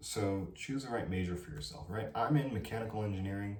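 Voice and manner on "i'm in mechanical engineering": fast, rushed, rattled-off speech. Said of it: "I'm speaking too fast".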